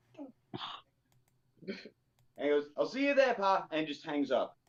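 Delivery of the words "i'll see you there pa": put-on native accent slipping out, pitched up. Acting out a character's phone call to their dad: accent coming out. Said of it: "I love the accent came out".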